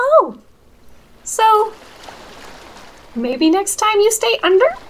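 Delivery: tiny, very high little spirit voice. Running the game, the speaker voices a spirit behind Dr. Big Toe: little spirit voice. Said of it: "you hear a little spirit voice from behind you go".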